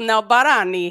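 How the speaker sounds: put-on speaking with an Italian accent. Saying a gymnastics move's name the italian way: italian accent. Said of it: "now I'm only gonna say it with the Italian accent".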